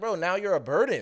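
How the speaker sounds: mad, high, cutting, angry put-down. Retelling a character's line in the game: imitating an angry character. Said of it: "she was mad".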